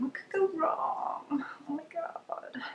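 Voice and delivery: high, breathy, frightened whisper.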